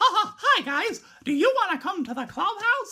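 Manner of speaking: high, slow cartoon voice. Retelling a short video where Mickey Mouse greets the camera: Mickey Mouse voice. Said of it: "I can kinda do his voice".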